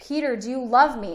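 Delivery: ordinary delivery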